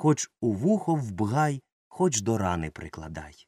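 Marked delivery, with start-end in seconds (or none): none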